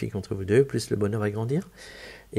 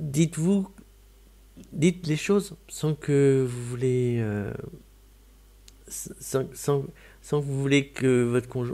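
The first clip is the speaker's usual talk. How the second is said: fumbling, restarting, stumbling, tangled phrasing; 4 semitones higher than usual. Giving advice about speaking to one's partner, stumbling over words. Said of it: "je bafouille".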